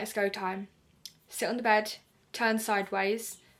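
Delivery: plain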